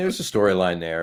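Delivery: ordinary delivery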